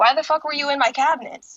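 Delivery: mock irritated tone. Retelling what a friend said in her kitchen, imitating an annoyed friend. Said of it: "she looks really annoyed".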